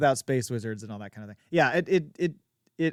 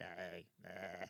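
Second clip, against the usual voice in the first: flat, lifeless, very low, quiet smoker's voice; 7 semitones lower, 25 dB quieter than usual. Describing the mom's voice, the speaker does a dead Marge Simpson's sisters voice. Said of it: "that dead voice".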